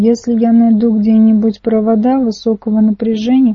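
plain

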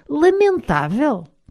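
high-pitched shout. A narrator reads one character answering another's remark, shouting. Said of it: "Gritou o Odanyo".

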